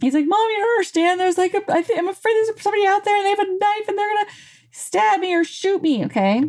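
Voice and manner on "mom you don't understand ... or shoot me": mock very high, crying, frightened child voice. Asking moms to imagine a frightened kid coming to them, imitating a scared kid. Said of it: "he's freaked out and he's scared".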